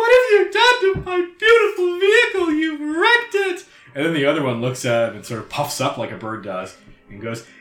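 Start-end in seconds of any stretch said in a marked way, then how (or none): 0.0-3.7 very high, loud, put-on woman's voice. Describing a character looking at the car you pushed in: man speaking in a woman's voice. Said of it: "he speaks in a woman's voice".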